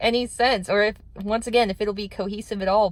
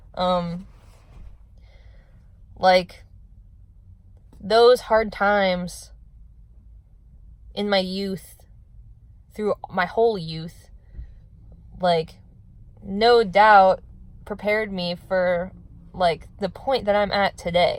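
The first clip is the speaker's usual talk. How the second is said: talking while holding back tears. Opening up in a conversation, holding back tears. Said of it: "I'm literally gonna cry, but I'm trying to not cry that much".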